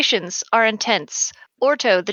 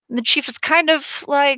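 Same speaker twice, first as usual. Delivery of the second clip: usual speaking voice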